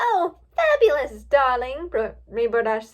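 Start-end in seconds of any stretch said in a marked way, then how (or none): 0.0-1.9 very flamboyant, very loud, showy voice. Reading a story, Rainbow Dash answering a reporter: very flamboyant voice. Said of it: "in a very flamboyant voice".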